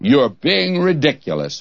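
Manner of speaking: haughty, scornful put-on British accent. Retelling what a man said to the speaker, in a put-on disdainful British voice. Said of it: "he said it in that British disdainful voice".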